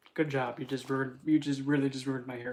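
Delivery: ordinary talk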